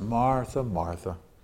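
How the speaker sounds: mild, kindly, soft and gentle delivery. Retelling how a name was gently repeated twice: acting out a gentle tone. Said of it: "he said it like this, Martha, Martha, just like that".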